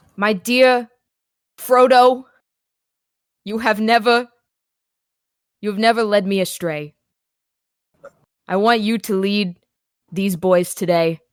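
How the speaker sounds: earnest, grave, solemn, stoic voice. A character looks up to the sky and speaks, serious and stoic. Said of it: "very seriously and kind of stoically".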